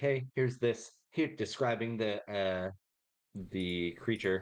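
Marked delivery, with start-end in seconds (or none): 0.0-0.9 whispering. Going back to the party to warn them about the creature: whispering.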